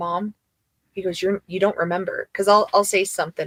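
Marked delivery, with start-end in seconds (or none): 1.2-2.3 put-on serious, earnest child voice. Retelling what the son says to his mom: imitating Rafi, all serious. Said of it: "he gets all serious and he goes".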